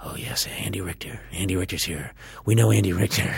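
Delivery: awed, reverent, hushed murmur. Retelling how everyone who worked at the restaurant greeted them: imitating hushed tones. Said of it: "in hushed tones".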